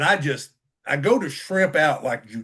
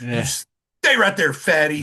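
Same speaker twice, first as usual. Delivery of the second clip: mock, slow, scolding reprimand tone; 3 dB louder than usual. Retelling a nurse ordering him to stay put, mock scolding. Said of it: "verbally abusing me".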